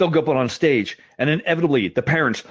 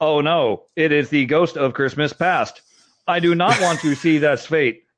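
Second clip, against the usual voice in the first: slow, flat robotic monotone. Imitating how a kid playing Scrooge delivered his lines, robotic Scrooge voice. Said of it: "he would talk like this".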